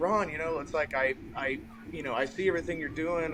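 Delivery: ordinary delivery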